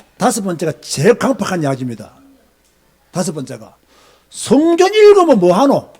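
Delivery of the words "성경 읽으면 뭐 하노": higher, slow, louder, sarcastic mocking tone. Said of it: "이렇게 비꼬는 사람들이 있어요".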